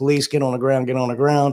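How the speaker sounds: usual speaking voice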